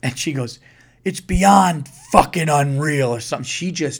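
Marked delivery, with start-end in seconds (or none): 1.0-3.1 punchy outburst in wrestling-promo style. Retelling an angry traveler's reply at the airport: imitating a WWE promo voice. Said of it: "she went W W E promo voice on me".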